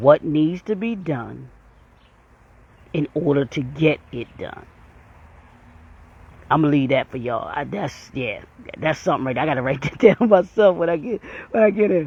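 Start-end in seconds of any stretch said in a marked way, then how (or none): 0.0-4.7 very slow, deliberate delivery, drawn out word by word. Repeating a question for listeners so they catch it, say it very slowly. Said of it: "I'm going to say it real slow".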